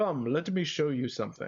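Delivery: put-on dignified character voice. Voicing a game character while playing, in a dignified voice. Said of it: "I'm just speaking in like a dignified voice".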